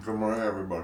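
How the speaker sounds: talking with mouth full, chewing. Greeting everybody on the Thursday before Memorial Day weekend, talking with mouth full, chewing. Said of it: "he has his mouth full of seeds and nuts".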